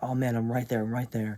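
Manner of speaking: ordinary talk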